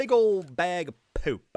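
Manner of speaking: heavy popped stress on both p's of poop. A streamer not getting what they needed, heavy emphasis on 'poop'. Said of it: "Heavy emphasis on both P's".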